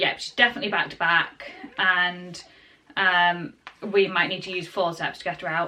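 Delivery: ordinary delivery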